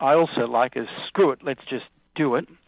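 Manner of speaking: ordinary talk, nothing marked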